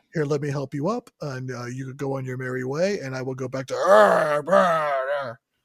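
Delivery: beastly growl switching to polite voice. Imitating a monster hero's voice from the film: imitating Toxic Avenger's voice. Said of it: "Got a little beast in his voice".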